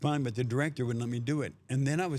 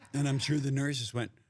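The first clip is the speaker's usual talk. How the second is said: ordinary talk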